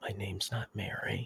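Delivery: breathy, hushed, secretive half-whispered murmur. Voicing a girl who gets quiet and half-whispers to another character, half-whispering. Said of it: "she just whispers to Rathan".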